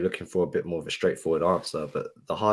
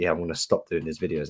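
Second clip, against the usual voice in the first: usual speaking voice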